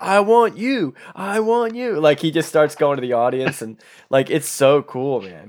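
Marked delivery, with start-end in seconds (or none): 0.0-2.0 eager, energetic cry, very high and very slow. Retelling Carl Weathers calling to a panel audience: energetic Carl Weathers impression. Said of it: "He has so much energy at that panel".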